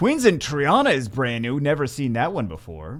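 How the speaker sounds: loud, sarcastic delivery. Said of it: "It's sarcasm".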